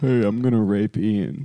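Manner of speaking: put-on low-pitched voice. Showing what it would sound like, as Adam Friedland: Adam Friedland impression. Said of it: "I think it would go something like this".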